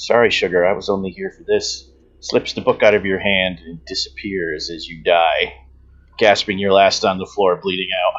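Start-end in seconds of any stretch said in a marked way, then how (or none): 0.0-1.9 soft, hushed whisper close to the ear. Game narrator voices her line to the stabbed player, whispering in his ear. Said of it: "she whispers in your ear".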